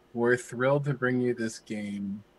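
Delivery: zero-energy, flat, deadpan announcer read. Mocking a game developer introducing his game with no energy, imitating a deadpan developer. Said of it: "was just like deadpan".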